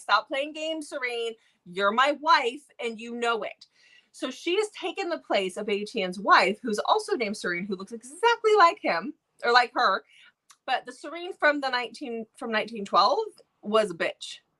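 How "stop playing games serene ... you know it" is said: put-on voice of a fuming, furious angry man. Retelling a book scene where a guy confronts her: imitating a fuming mad man. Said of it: "fuming mad".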